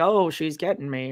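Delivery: mock muttering under breath. Retelling what someone said quietly while watching: imitating muttering under breath. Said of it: "under his breath".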